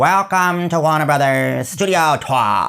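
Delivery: very high, screechy, squawking put-on character voice. Recreating the original Warner Brothers Studio Tour welcome, in a very squawky put-on voice. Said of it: "it was done in this very squawky voice originally".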